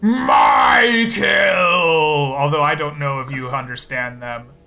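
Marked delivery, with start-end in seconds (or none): 0.0-2.3 loud, screaming troll monster war cry. Voicing trolls who scream at the players: trolls screaming. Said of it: "they scream out".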